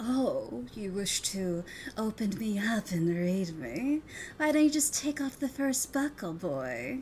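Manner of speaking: slow, alluring, flirtatious, seductive voice. Voicing a book inviting someone to open and read it, seductive alluring voice. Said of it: "in a voice that you find really attractive".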